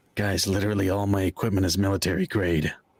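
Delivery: hushed whisper. A character turns so a guy can't see his mouth and whispers to everyone. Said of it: "he kind of whispers o- over to everyone".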